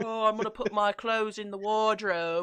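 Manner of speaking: very loud, mocking, put-on British accent. Switching between two roles in a skit, the speaker plays the Brit: mocking British accent. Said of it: "I'm British".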